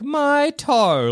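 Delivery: very high, tiny cartoon bird voice. Acting out stubbing a toe as time slows: Tweety Bird voice. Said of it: "like Tweety Bird might".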